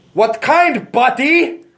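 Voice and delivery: very high put-on French-ish accent, "buddy" as "but-e". Retelling a gas station worker's reply to his order; imitating a clerk's accented 'buddy'. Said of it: "he would say it like, but-e".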